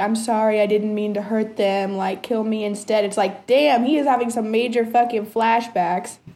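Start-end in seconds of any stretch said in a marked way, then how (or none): none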